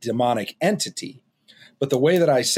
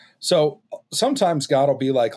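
ordinary delivery

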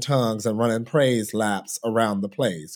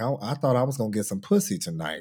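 put-on nonchalant, cool, casual voice; 3 dB quieter than usual. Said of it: "in this just very, you know, nonchalant way".

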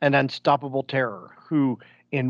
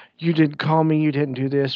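put-on angry, mad voice; 3 dB louder than usual. Retelling a movie scene where the doctor's sister scolds him: imitating someone all mad. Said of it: "she's, like, all mad".

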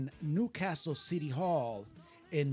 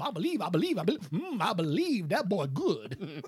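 put-on cartoon rooster voice; 4 semitones higher, 5 dB louder than usual. Describing a guy who talks like a cartoon character: Foghorn Leghorn voice. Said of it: "in the Foghorn Leghorn voice".

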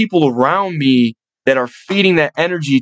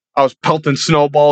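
normal talking voice

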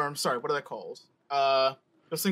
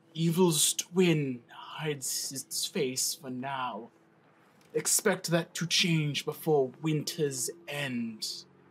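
put-on slow, aged, wizened old man voice. The narrator voices a monk answering the party's question about threats, old wizened monk voice. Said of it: "the monk nods and he says, / old wizened man and stuff like that with like a curious head tilt".

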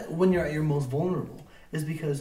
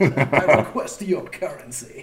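loud, booming cartoon-character voice; 6 dB louder than usual. Joking about paying on Patreon in a Mister Krabs voice. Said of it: "Sounds like Mister Krabs right there".

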